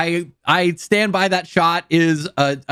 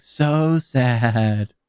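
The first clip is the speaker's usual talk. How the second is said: put-on creepy echoing voice; 5 semitones lower than usual. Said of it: "creepy echo thing of, like, they're just kinda, like, echoing his speech".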